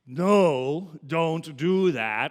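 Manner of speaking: loud, slow, very stern voice with drawn-out "no". Speaker giving an example of an imperative, in a very stern voice. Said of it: "in a very stern voice".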